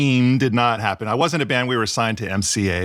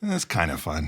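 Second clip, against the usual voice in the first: mock low-key, low, soft, unenthused delivery; 6 semitones lower, 7 dB quieter than usual. Correcting how the others quoted his earlier remark, retelling it without excitement. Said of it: "I wasn't quite that excited the way I said it".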